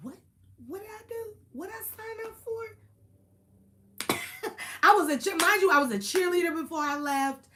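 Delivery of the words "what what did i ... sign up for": high, soft, bewildered little voice. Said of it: "I just remember thinking".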